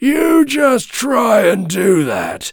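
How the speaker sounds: large, husky billy goat voice. Narrator reading the biggest billy goat answering the troll, in Gruff's big hoarse voice. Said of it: "in his big, hoarse voice".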